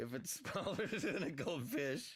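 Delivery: high voice, laughing all the way through the words.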